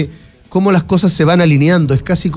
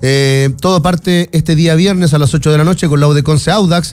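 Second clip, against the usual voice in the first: ordinary talk, nothing marked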